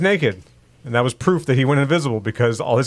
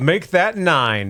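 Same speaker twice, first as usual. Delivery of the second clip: put-on German-accented delivery; 4 semitones higher than usual. Retelling a scene from last night's X-Men episode: Nightcrawler German accent. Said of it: "but he had a German accent".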